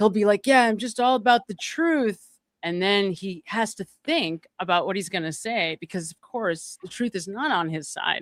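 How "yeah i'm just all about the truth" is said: put-on drunk, careful speech, higher and louder. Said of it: "There's dead Zen zones in his speech".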